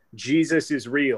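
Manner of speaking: mock, sudden, loud shouted exclamation. Retelling yelling to girlfriend after reading a fake tweet: retelling own yell. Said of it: "I looked over at my girlfriend and I yelled".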